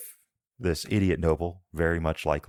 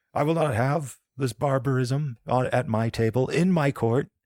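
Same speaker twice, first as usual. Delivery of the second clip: furious, angry, high-pitched shout; 8 semitones higher than usual. Narrating a scene, the speaker voices the angry duke: angry shouting duke. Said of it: "He begins shouting now".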